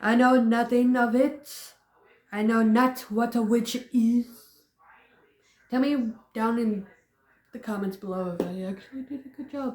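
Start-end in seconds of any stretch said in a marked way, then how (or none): 0.0-4.3 put-on stage witch voice with Thai English accent. Redoing a quoted line from a woman accused of witchcraft, Winifred from Hocus Pocus voice. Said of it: "Sounding like almost like Winifred from Hocus Pocus".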